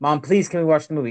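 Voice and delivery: pleading, imploring, begging tone. Retelling asking mom to watch the movie: imitating own past begging. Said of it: "I'm begging my mom".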